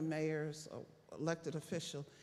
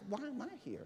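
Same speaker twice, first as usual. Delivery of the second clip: mock baffled, puzzled, genuinely lost tone; 6 semitones higher, 6 dB quieter than usual. Retelling the superintendent of schools' question at a meeting: imitating a baffled person. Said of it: "the superintendent of schools was baffled".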